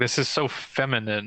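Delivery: ordinary talk, nothing marked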